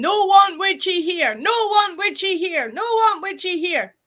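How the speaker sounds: put-on play-acted little girl screaming, high, over and over. Retelling what she screamed while the barricade was taken down, imitating her screaming. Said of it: "she's screaming".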